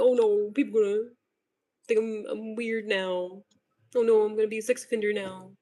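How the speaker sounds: fake blubbering, self-pitying sobbing lament. Mocking caught men who cry when exposed: mock crying. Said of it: "They be crying for themselves".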